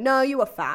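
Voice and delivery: loud, blunt, cheeky, sassy put-down tone. Retelling the chaplain's blunt put-down: imitating a sassy chaplain. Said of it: "he's such a sassy bitch".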